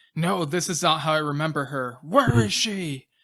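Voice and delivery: put-on shout. Recapping a scene where Nick denies the memories; retelling a yell. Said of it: "he yells like".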